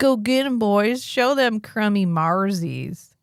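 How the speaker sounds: put-on Southern accent. Acting out what the people at the bar say, in a Southern accent. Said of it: "It just feels right. It's like".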